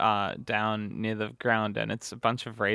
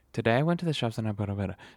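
one unbroken, breathless, rushed run-on. Describing a new way of talking without breathing: TikTok voice, no breaths. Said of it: "The new TikTok voice is like, talking without breathing".

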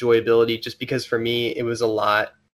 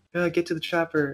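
put-on lifeless, flat, half-hearted delivery, pitched up; 6 semitones higher, 5 dB quieter than usual. Mocking how a movie character said a famous line: imitating a flat, half-hearted line delivery. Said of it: "He's just like".

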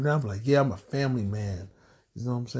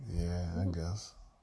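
low, soft, let-down, disappointed voice; 6 semitones lower, 7 dB quieter than usual. Told they still have each other and the kids, a character answers disappointed. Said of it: "You ain't got to sound so disappointed".

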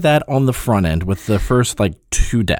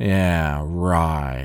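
put-on knowing, dry, in-on-it tone; 8 semitones lower, 5 dB quieter than usual. Retelling the scene where Mel meets the cook, in a knowing tone. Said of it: "a very knowing tone in his voice".

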